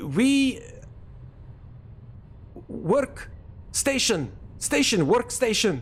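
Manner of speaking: put-on thick Russian accent, broken English, very high pitch. Retelling a station worker's words to a soldier, in a heavy Russian accent. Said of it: "in a very broken English with heavy Russian accent".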